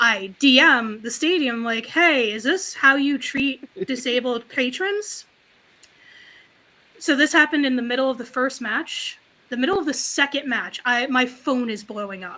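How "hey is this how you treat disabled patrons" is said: aggrieved, demanding voice. Retelling a message of complaint to the stadium: put-on Karen complaint voice. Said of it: "letting a little of my Karen out".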